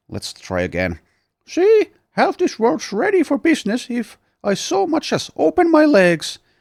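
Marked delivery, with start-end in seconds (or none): 1.4-6.3 very high, loud cartoon-teenager voice. Narrating a scene, voicing a woman who throws her hands out, voice like The Simpsons teenager. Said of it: "That sounded more like the teenager".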